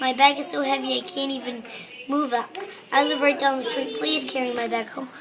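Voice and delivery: ordinary delivery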